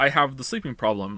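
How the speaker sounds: ordinary talk, nothing marked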